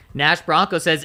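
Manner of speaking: ordinary talk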